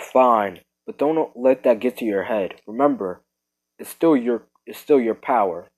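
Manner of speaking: ordinary delivery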